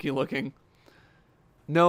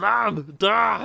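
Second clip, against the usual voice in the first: loud, higher-pitched grunts and shouts. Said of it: "You just gotta do a lot of, like".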